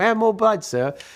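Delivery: put-on very high, childlike little-kid voice. Retelling how the kids asked for more blood: Oliver Twist voice. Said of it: "Like Oliver Twist".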